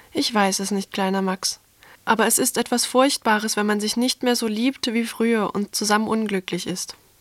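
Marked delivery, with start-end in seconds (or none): none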